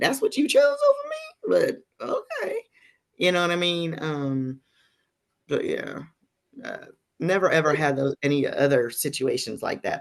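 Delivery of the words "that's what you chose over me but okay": very high, hurt, incredulous squeak. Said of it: "it makes him totally".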